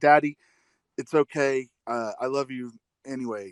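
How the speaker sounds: mock sweet, tender, slow, heartfelt comforting voice. Retelling a daughter's reply to her dad: imitating a heartfelt, sweet answer. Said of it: "the most heartfelt, like, just sweetest answer".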